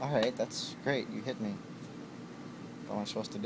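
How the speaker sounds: low, soft, unbothered, indifferent tone.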